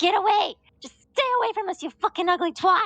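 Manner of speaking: very high, screeching female goblin voice, shouted. Game narrator voices a goblin heard from behind the party, in a female goblin voice. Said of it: "female goblin just like".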